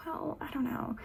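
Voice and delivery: small, soft, cute, sugary sweet little voice. Voicing the little voice in the listener's head, quiet, cute, sweet voice. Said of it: "she's super quiet and cute and sweet".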